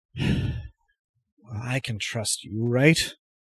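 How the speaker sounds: voice dropped and kept close. The narrator voices a man who gives you a look before speaking: lowered voice. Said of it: "lowers his voice and says".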